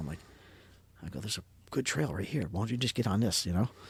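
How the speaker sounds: hushed whisper under the breath. Telling the group a story about finding a trail down the hill, whispering. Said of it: "I don't know why I'm whispering to you guys".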